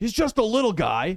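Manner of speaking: quick, loud, high-pitched yell. Narrator voicing one of the enemies during a group attack, yelling. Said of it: "one of them just yells".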